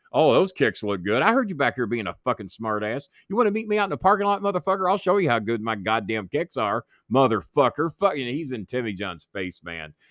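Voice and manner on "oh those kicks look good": sarcastic, put-on tone meaning the opposite. Speaker retelling a confrontation over sneakers, acting out a sarcastic remark.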